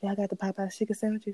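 put-on whisper. Retelling how mom asked the cashier about the sandwiches: imitating a whisper. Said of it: "she whispered to the cashier".

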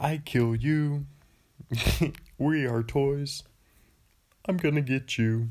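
slow, drawn-out evil villain voice. Joking about a movie villain's name: Barnaby villain riff. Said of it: "That's my Barney, Barnaby riff".

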